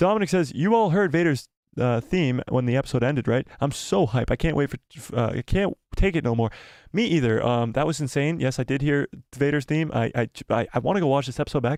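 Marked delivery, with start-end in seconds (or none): none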